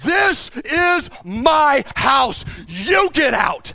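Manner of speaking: very loud, very slow, shrill, furious drawn-out shout. Retelling yelling back at a frightened kid in his house, retelling an angry yell. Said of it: "I yelled back at him in anger".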